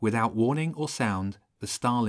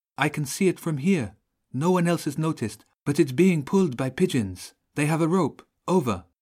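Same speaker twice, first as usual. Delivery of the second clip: anxious, uneasy, worried voice, slightly pitched up; 5 semitones higher, 4 dB louder than usual. A voice over the radio warns a companion, sounding worried. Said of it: "sounding worried".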